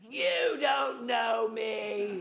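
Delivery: put-on very slow primal cry, me dragged out. Retelling a friend's outburst in a class: imitating a primal outburst. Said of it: "this primal voice came out of sweet little Connie".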